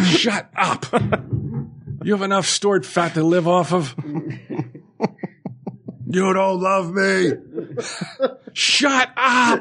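high, laughing mock voice.

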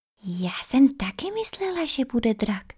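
hushed whisper. Facing the dragon queen, a girl answers another girl, whispering back. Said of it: "šeptala zpátky Luna".

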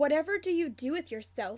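dry, understated, drily inquiring tone. Narrator reads one roommate answering another, dry. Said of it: "James says dryly".

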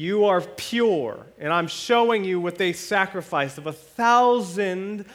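high, loud, vindicated tone.

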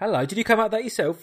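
high, condescending, patronising, talking-down tone. Reacting to the other speaker's own theory about a film title: patronising tone. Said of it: "didn't mean to sound patronising".

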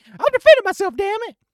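put-on, very high, loud, worked-up excited outburst. Mimicking how the listener sounds once excited, imitating someone getting excited. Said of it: "until you get excited".

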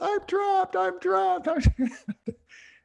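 put-on very high, panicked, crying little girl voice.

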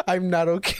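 imitated laughing while talking. Retelling a friend's words while she was laughing: imitating someone laughing while talking. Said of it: "She's just sitting there laughing".

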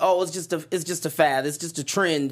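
normal talking voice

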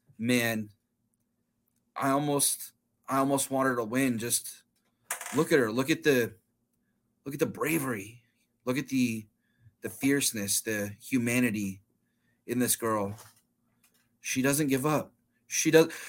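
steady, calm, earnest, heartfelt, acted. Retelling a film character's speech very calmly and very sincerely. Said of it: "he very calmly and very sincerely, he goes".

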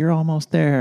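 put-on, very high, shrill yelled cheer. Recalling what someone yelled at the seven mile mark of a run, retelling a yell. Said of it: "someone had yelled like".

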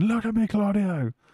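put-on screaming, very high-pitched. Retelling a wrestler's words to another in the ring: imitating Eddie Kingston screaming. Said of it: "you just got Eddie there screaming".

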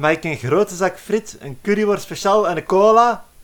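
acted-out loud call. Telling a joke, acting out a character calling out in the library. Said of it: "en roept".

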